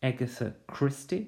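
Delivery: first-syllable stress on agatha christie. Pronunciation examples, naming a famous detective writer: first-syllable stress on Agatha Christie. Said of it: "with a stress on the first syllable".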